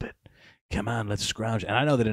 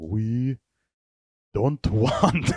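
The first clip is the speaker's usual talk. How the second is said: loud, bad, failed put-on Chinese accent; 4 semitones higher, 6 dB louder than usual. Imitating Chinese guys in a room at TikTok: bad put-on Chinese accent. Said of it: "I can't do a Chinese accent".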